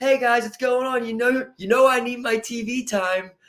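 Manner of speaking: high, wholesome, squeaky-clean, sweet goody-two-shoes voice. Imitating a wrestler's comedy character entrance: smiley goody-two-shoes Chris Jericho voice. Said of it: "smiley, like a sixties goody two-shoe".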